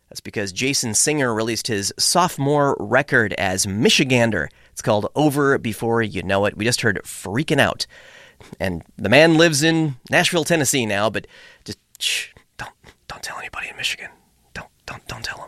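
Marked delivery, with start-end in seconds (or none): 11.1-15.5 hushed, secretive whisper. Radio host talking about a musician who moved to Nashville, whispering. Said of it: "Why am I whispering?".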